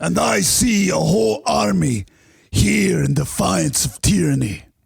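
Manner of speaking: put-on slow, rough, guttural, rousing Scottish-accented delivery. Joking about Scottish accents, doing a William Wallace Braveheart voice. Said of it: "that was [name]'s Braveheart".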